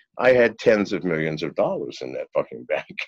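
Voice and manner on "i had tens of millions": ordinary delivery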